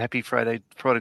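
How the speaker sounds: plain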